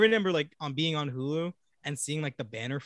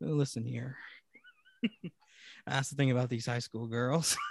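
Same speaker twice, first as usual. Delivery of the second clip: put-on voice with rolling, swooping pitch; 3 dB quieter than usual. Joking that gaslighting turns him into this, in Matthew McConaughey voice. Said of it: "I turn into Matthew McConaughey".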